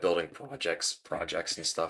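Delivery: little break in the voice. Talking to viewers about the job hunt, the voice cracks: voice cracks. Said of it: "I had a little voice crack there".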